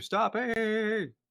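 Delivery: very high-pitched yelling. Voicing a character calling to the others to stop digging: shouting. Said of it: "you hear Ander shouting to the rest of you".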